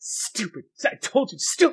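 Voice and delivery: slow, dragged-out mutter under the breath. Voicing a character reacting in the game: muttered under his breath. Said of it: "under his breath".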